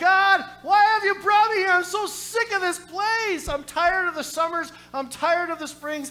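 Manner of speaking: loud, high-pitched, fed-up screaming. Recalling screaming to God in the back of a church, retelling a scream to God. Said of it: "I'm screaming to God".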